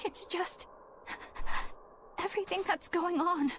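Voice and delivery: tearful. Asked whether they are crying, the speaker answers while crying. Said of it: "Are you crying?".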